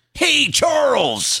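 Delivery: very high-pitched character voice. Doing an impression of Buddy from Charles in Charge: Buddy from Charles in Charge impression. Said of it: "my buddy from Charles in Charge impression".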